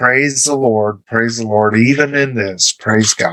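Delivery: ordinary delivery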